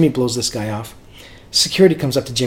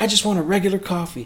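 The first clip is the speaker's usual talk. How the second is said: put-on Southern accent of Memphis; 7 semitones higher, 5 dB quieter than usual. Retelling a drive-thru exchange, quoting a man's reply in a Memphis accent. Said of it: "in his Memphis voice".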